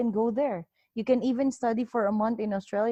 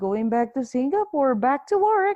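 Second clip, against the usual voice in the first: mock sarcastic, loud, swooping voice; 3 semitones higher, 5 dB louder than usual. Retelling own answer to a border officer: retelling a sarcastic reply. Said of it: "I just talked to her, like, sarcastic".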